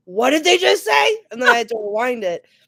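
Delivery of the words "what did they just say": very high, loud outraged shriek of disbelief. Retelling a reaction while watching something; retelling a scream of outrage. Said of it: "I screamed".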